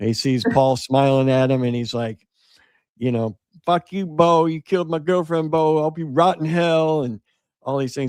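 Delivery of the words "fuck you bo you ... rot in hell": put-on furious, accusing, pitched-up rant. Telling a story, acting out a man screaming at Paul; retelling angry screaming. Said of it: "He's screaming at it".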